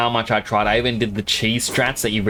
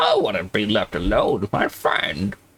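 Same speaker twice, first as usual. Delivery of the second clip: put-on elderly man voice, sing-song, swooping, wobbling up and down. Showing another speaker how Roy should sound: old man voice. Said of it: "You don't sound like an old man. You sound more like this".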